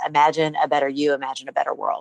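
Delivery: ordinary talk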